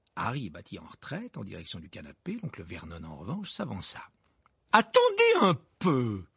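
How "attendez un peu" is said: very high, swooping cried-out exclamation. Uncle Vernon steps forward, speaking toward the fake fireplace, cried out. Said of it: "s'écria-t-il".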